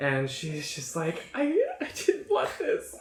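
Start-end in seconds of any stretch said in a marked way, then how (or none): 1.3-3.0 high, shaky, broken sobbing voice. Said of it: "Just crying".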